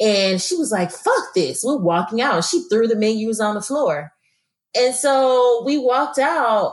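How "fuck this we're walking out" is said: put-on livid, fed-up, seriously angry outburst. Retelling a cousin walking out after throwing the menus: imitating someone seriously angry. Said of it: "seriously angry".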